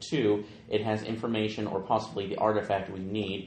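ordinary talk

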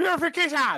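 screaming. Shouting a battle cry after a kill in the game: screaming in character. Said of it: "Why are you randomly screaming purification?".

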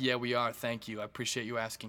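pointed, snide, mocking sarcasm. Retelling her reply when asked about their conversation, mock-sarcastic reply. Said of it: "Sarcastic, like I'm an asshole, right?".

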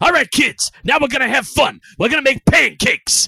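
booming, very loud, high-pitched belted cheering. Retelling a scene from the movie: Al Pacino impression. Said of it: "he's like".

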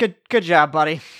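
slightly exasperated tone, a touch of exasperation. Game narrator voicing a character after a player's first rain spell, slightly exasperated. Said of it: "a little bit of exasperation in Kevin's voice".

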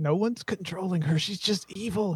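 fearful, hushed half-whisper. A game master voices a man answering a player's question about Melinda, half-whispering. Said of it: "He's whispering this to you".

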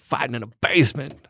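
put-on country accent. Retrying the Brad Pitt line to make it closer: Brad Pitt voice. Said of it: "now it's more Brad Pitt?".

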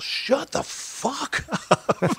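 mock very slow, deliberate yelling, dragged out word by word. Retelling how someone yelled at talkers during a movie: imitating Dion yelling. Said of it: "Dion just yells".

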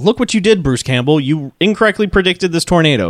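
normal talking voice

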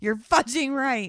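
high, very loud shrieked scream. Retelling how a mother screams at her daughter: imitating a scream. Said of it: "She screams to Joy".

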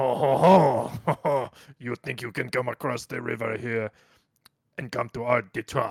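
put-on French Canadian accent. Asked for a Canadian accent, speaker plays someone bigoted toward non-French speakers, bigoted French Canadian accent. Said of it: "bigoted against you if you're not speaking French Canadian".

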